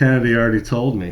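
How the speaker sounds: plain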